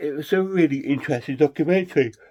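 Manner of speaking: speaking through a yawn. Reviewing a four-hour documentary just watched, yawning while talking. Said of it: "So sorry I'm yawning".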